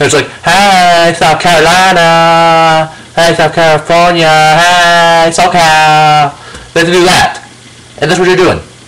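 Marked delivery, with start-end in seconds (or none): 0.5-6.3 very slow, mocking, put-on drawl. Mocking how certain people talk, high-pitched mocking voice. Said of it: "that high-pitched fucking voice".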